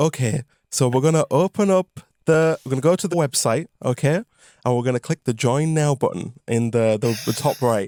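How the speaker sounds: put-on very slow, gentle voice. Retelling a phone call where someone explains a website: imitating a very slow, gentle voice. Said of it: "in this same voice".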